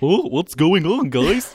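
high-pitched, drawn-out cartoon voice. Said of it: "that impression".

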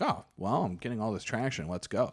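ordinary delivery

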